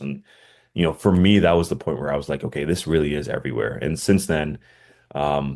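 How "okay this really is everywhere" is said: usual speaking voice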